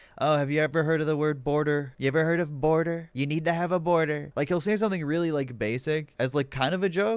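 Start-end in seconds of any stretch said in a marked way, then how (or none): 0.2-4.3 put-on ironic, falsely sincere voice. Showing how Trump talks after a speech, do a Trump impression with ironic faux sincerity. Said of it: "ironic uh, faux sincerity or whatever that Trump kind of does".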